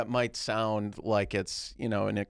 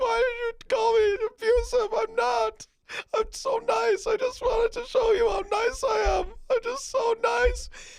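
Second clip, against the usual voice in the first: very high, fake-crying, sobbing ranting voice; 4 dB louder than usual. Acting out a pretend scene, accusing a girlfriend: mock crying while ranting. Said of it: "I'll start crying".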